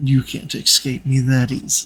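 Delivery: silky, velvety smooth voice. Voicing a speaker in a narrated scene, in a velvety smooth voice. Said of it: "you hear a velvety smooth voice say".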